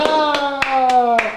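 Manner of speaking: crowd shrieking gleefully, drawn-out ha. Imitating a movie audience watching a chainsaw scene: imitating gleeful screaming. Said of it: "the audience begin in glee, screaming".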